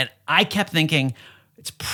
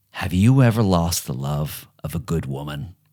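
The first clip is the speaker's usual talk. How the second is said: hushed whisper, lower and slower; 7 semitones lower than usual. Retelling how a man leaned in to ask something, retelling a whisper. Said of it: "he leans in and he whispers to me".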